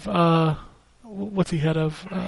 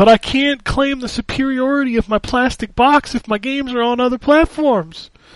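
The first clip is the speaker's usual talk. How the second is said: mock fanboy whining, higher pitch; 5 semitones higher than usual. Mocking console fans who want exclusive games: mock fanboy whining. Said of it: "this fanboy shit's killing me".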